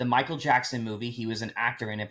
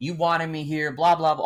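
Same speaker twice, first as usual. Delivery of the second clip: put-on screamed rant, higher and louder; 5 semitones higher, 5 dB louder than usual. Retelling a scene where a character rants at him: imitating Jenna screaming. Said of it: "screaming at him".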